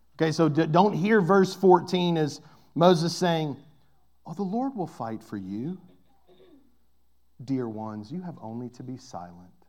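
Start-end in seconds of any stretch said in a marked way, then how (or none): 4.3-9.5 hushed, soft, soothing put-on parental voice. Picturing Moses' verse heard as a bless-your-heart moment: put-on comforting parental tone. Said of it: "it's not like a comforting parental bless your heart moment".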